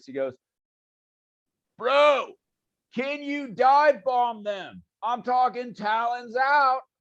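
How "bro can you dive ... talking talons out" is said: high, drawn-out hollered yell. Voicing a character calling out to a player: yelling in character. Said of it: "He yells to you".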